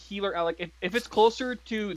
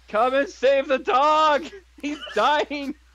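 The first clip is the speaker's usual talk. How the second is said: loud, high-pitched, put-on in-character yell; 6 semitones higher, 5 dB louder than usual. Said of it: "I'm yelling".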